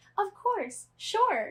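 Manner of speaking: very high, squeaky little doll voice. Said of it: "change her voice, like, to make it squeakier".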